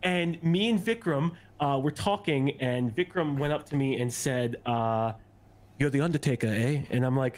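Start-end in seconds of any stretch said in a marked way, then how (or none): 5.8-6.8 put-on horrendous English accent. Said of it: "horrendous English accent".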